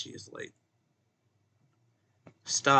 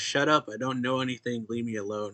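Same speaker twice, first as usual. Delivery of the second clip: ordinary delivery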